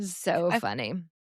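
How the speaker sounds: ordinary talk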